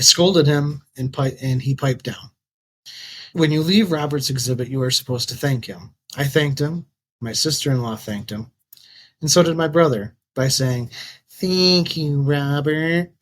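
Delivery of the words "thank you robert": mock, pointedly sarcastic, insincere tone. Retelling how my brother thanked the man whose exhibit we left: mock-sarcastic thank-you. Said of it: "in a sarcastic tone".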